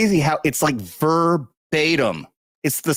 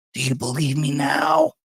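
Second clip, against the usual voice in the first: put-on, creepy old man voice. Mimicking a man who leans in wanting to be believed, creepy old man voice. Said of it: "so he does a really creepy old man voice".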